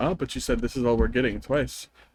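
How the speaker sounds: ordinary delivery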